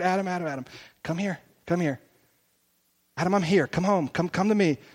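put-on whisper. Acting out god calling someone home in the heart: acting out a whisper. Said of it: "He whispers in my heart".

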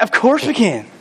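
mock annoyed, quiet, put-out teenage duh tone. Acting out how a figure in verse 2 answered, mock put-out. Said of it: "She's almost put out".

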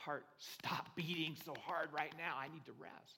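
soft, hushed whisper under the breath. Retelling a heart transplant climber's words to her heart: imitating someone whispering. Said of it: "I had to whisper to my heart".

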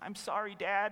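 put-on small trembling voice. Speaker acting out a boy apologizing to his dad, imitating a little quivering voice. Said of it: "in his little, quivering voice".

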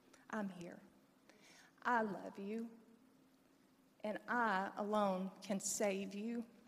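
soft, hushed, still, quiet voice. Speaker recalls the spirit within speaking to them, in a quiet, still voice. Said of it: "in that quiet, still voice".

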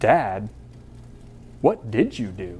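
slow, hushed, worried, concerned whisper. Retelling his son's reaction to a story, imitating a concerned question. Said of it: "he asked in a concerned voice".

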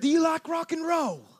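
put-on loud, very high British accent. Retelling hearing a stranger's voice in an airport: imitating a British accent. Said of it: "God does have a British accent".

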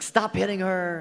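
exasperated, loud screaming yell. Acting out parents in the car before church, imitating screaming at the kids. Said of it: "we're screaming at the kids".

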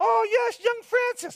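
very high-pitched nun voice. Recalling knocking on the nuns' door and the nun's greeting, imitating a nun's voice. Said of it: "That was her voice".

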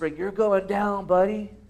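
hushed voice. Voicing the world taunting someone who walks in integrity: whispering. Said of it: "the world loves whispering".

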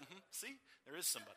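acted, cheeky, snarky, smug know-it-all tone. Retelling a son's reply to his father's bedtime words: imitating a snarky child. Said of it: "he does it in that kind of way".

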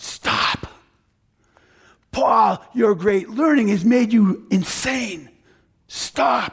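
mild, half-yelled, half-shouted outburst. Speaker retelling Festus shouting at Paul, retelling Festus shouting. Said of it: "and he just shouts".

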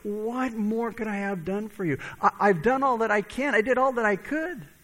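mock imploring, heartfelt, passionate pleading. Acting out his words about the wild grapes, retelling a pleading voice. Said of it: "the pleading in his voice".

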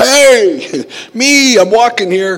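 put-on slow, stretched, very high shout. Retelling yelling at a truck that nearly hit the speaker, retelling a yell. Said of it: "I yelled".

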